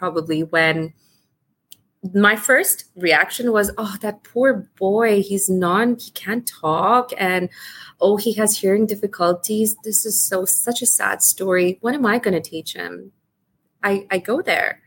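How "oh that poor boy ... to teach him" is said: ordinary talk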